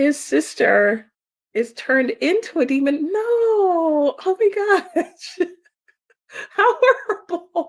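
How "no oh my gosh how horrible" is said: high laughing talk, the word no stretched out. Hearing a manga's plot explained, the speaker reacts while laughing. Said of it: "I'm sorry, I'm laughing".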